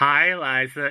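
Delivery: mock old person voice. Voicing Santa, speaker greets Liza: hundred-year-old Andy Dick voice. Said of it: "I'm trying to do the voice".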